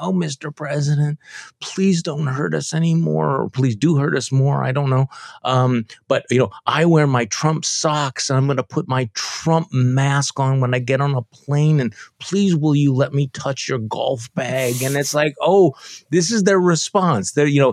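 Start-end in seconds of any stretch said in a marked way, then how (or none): 0.0-14.8 fake grovelling, higher pitch. Acting out a state senator's written message to the president: mock grovelling plea. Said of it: "wrote this grovelly thing".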